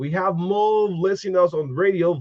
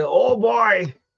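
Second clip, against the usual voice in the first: put-on seasoned veteran newsreader on-air delivery; 2 semitones higher than usual. Saying the words 'oh boy' in the Martin Brown voice. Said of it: "Like in the Martin Brown voice, in the veteran journalist Martin Brown, I say".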